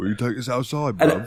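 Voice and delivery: put-on cocky Cockney accent with mouth pulled back. Imitating a game character's Cockney accent: Yangus Cockney voice. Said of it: "Yangus talk like this".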